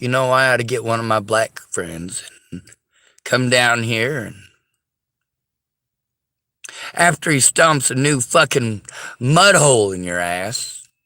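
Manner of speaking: ordinary talk, nothing marked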